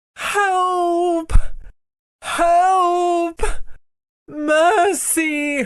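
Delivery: weak, faint voice. Narrating, the witch cries out as the others leave her, in a faint voice. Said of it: "cried the witch in a faint voice".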